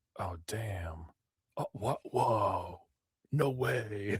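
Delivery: hushed, very slow, drawn-out half-whisper under the breath. Retelling what a moviegoer behind them kept saying: imitating a half-whispered reaction. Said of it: "he was whispering it".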